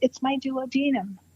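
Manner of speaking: timid, meek, mild, quiet little voice. Retelling the first thing a woman said, imitating a meek, mild, quiet voice. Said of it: "she just went very, in a meek, mild, quiet voice".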